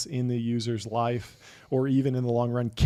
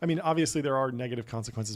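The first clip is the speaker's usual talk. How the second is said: ordinary delivery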